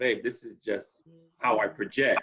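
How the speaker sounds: ordinary delivery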